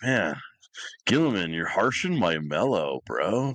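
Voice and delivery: mock laid-back surfer voice. Imagining a character talking like a surfer bro: surfer bro voice as Leman Russ. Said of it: "a surfer bro and being like".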